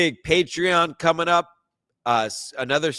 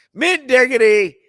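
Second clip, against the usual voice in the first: all-out shrill, loud screaming; 9 semitones higher, 5 dB louder than usual. Thanking a viewer for a ninety-nine cent super sticker: screaming. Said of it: "I'm screaming".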